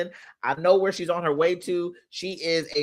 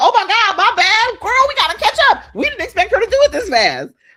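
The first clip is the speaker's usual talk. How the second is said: acted voice, higher and louder; 11 dB louder than usual. Acting out your life rushing to catch up with you: voicing the rest of your life as a person. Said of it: "The rest of your life is like".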